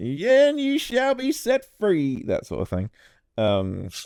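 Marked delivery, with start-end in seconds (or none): 0.0-2.2 Southern preacher voice, higher and louder. Voicing a man preaching to a crowd: Southern Baptist preacher voice. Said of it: "You sound like a Southern Baptist snake oil salad".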